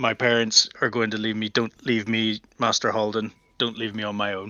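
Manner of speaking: terrified, frightened, pleading, stumbling stammered start. Voicing a terrified apprentice begging his fallen mentor: pleading frightened voice. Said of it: "he sort of says".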